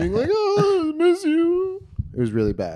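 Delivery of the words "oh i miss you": play-acted very high, very slow, drawn-out weepy crying whine. Retelling calling an ex many times a night: imitating own past crying.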